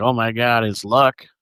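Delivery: ordinary delivery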